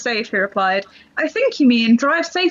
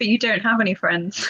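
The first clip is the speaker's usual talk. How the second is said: play-acted dry, level, completely deadpan, no expression. Retelling what she said when told the speaker was seeing friends: retelling a deadpan remark. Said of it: "completely deadpan".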